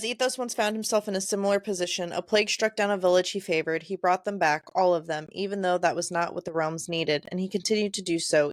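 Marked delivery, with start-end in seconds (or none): none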